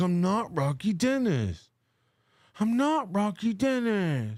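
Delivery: slow, play-acted fed-up, angry and insistent. Retelling how she reacts to comments, imitating someone getting mad. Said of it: "and she gets so mad. She's like".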